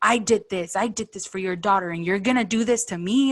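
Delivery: mock-angry, stomping tantrum rant. Recounting a man confronting the speaker's mom at church, imitating a foot-stomping tantrum. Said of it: "slam his little foot on the concrete".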